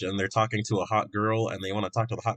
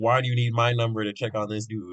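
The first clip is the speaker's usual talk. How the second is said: usual speaking voice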